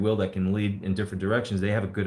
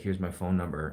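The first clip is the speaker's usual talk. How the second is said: put-on whisper, quieter; 4 dB quieter than usual. Retelling a dream in which a girl whispers a question: imitating a whisper. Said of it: "whispered in my ear. She's like".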